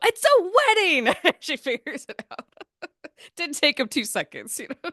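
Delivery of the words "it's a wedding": mock very high, loud shout of glee. Retelling the moment Anna figures out it's a wedding; retelling Anna's loud excited line. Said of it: "how loud she says it's".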